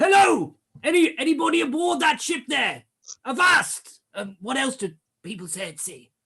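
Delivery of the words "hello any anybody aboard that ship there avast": shrill, very high, loud, far-carrying bellow. Voicing a character calling out from a ship: bellowing as Charlie. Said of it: "bellows Charlie".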